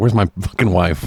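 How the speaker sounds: blunt, no-nonsense movie hard-man action-hero voice. Recapping a movie, acting out the captured hero: imitating Farmer from the movie. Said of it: "He's just like".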